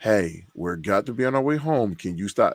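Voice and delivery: ordinary talk, nothing marked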